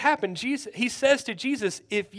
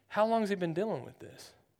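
put-on composed, unbothered tone, low and soft; 4 semitones lower, 9 dB quieter than usual. Retelling how he asked a question while everybody else was panicking, imitating someone very calm. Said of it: "he says very calmly".

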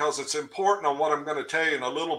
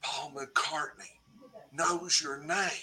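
soft, hushed half-whisper under the breath; 9 dB quieter than usual. Retelling a remark half-whispered beside a stopped car: imitating a half-whisper. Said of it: "and Billy whispers".

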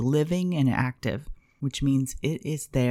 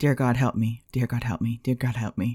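mock, panicked, pleading prayer-like delivery; 2 semitones lower than usual. Giving an example of the wrong kind of prayer: mock panicked prayer. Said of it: "I'm panicking".

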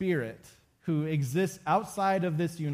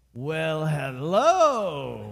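loud put-on raspy voice, drawn out; 5 dB louder than usual. Telling a story, quoting a woman who turned and greeted them: imitating a raspy voice. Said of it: "she says in this raspy voice".

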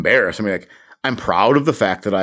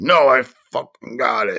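frustrated, huffy, mad and drawn-out delivery; 6 semitones higher than usual. Retelling a man who refused an offer of help with his boat: imitating a huffy reply. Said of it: "like all huffy".

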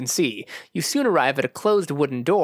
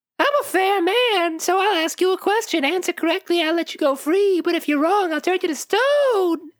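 put-on piping, very high elderly man voice. Narrator voices a figure in tattered rags addressing the players: high-pitched character voice. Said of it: "In a high-pitched voice".

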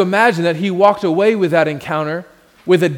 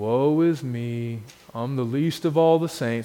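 donkey character voice, much lower; 6 semitones lower, 9 dB quieter than usual. Speaking to an audience about the 'Eeyore syndrome', doing an Eeyore impersonation. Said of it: "That's my Eeyore impersonation".

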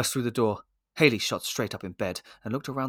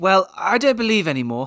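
indignant, higher and louder; 8 semitones higher, 8 dB louder than usual. A child, teased about still writing letters to Saint Nick, replies: indignantly. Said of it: "Jack said indignantly".

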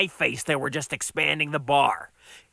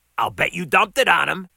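ordinary delivery

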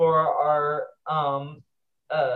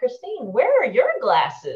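put-on, really loud, high, animated voice; 8 semitones higher, 3 dB louder than usual. Retelling a teenage girl asking at a graduation dinner table, really loud. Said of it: "she says it really loud".

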